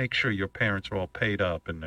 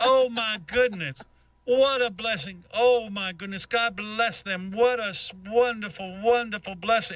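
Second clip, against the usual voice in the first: very high, slow, preachy evangelist sermon voice; 12 semitones higher than usual. Retelling what she said in the conversation: evangelist voice. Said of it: "it sounded like an evangelist".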